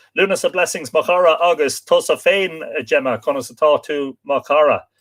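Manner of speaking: ordinary delivery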